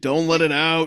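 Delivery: deep, dropped voice. Voice actor retaking a line after being asked for a deeper register. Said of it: "What about a deeper register?".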